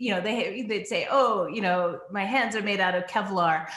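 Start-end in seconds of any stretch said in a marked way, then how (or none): 1.1-3.7 dry, sarcastic, tongue-in-cheek tone, acted. Retelling a grandmother's remark about how hot it was: imitating sarcastic tone. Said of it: "sarcastic about how hot it was".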